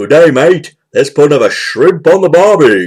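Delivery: fake, put-on Australian accent. Speaker retelling a movie scene where a character guesses a woman's accent: Lloyd's fake Australian accent. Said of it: "he puts on that accent".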